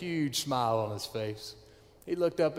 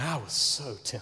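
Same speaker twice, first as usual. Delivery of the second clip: usual speaking voice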